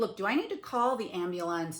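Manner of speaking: ordinary talk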